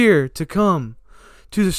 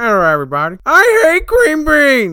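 put-on childish puppet voice, higher and louder; 8 semitones higher, 5 dB louder than usual. Introducing himself as Jeffy to everybody: Jeffy voice. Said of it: "My name's Jeffy".

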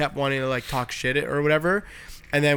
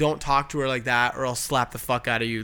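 normal talking voice

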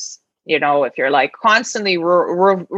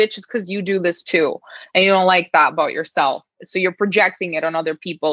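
ordinary talk, nothing marked

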